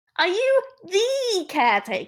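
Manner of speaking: very high, tiny, little squeaky voice. Voicing the voice from the crate, asking the same question again, small squeaky voice. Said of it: "now I need to do a small squeaky voice".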